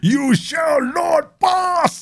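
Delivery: mock grand warrior cry, very high, very slow, drawn out. Retelling a school football match: imitating a barbarian yell. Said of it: "stood like some kind of barbarian".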